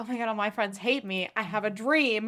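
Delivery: ordinary delivery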